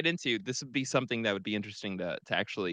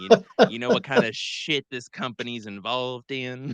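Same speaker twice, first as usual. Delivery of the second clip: loud, slow, drawling put-on Southern accent; 7 dB louder than usual. Imagining someone stocking Mountain Dew at work, put-on Southern accent. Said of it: "you got that kind of Southern accent".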